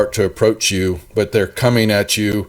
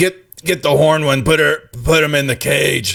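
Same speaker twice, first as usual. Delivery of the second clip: gruff, barked, pitched up; 6 semitones higher than usual. Voicing the captain who barks down orders: barking orders as the captain. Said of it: "he basically barks down and goes".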